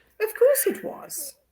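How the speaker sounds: hushed, breathy upper-class British English accent. Guest who lived in england shows the host his old accent, english accent. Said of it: "I refuse to believe that that was how you used to go to the pub and talk".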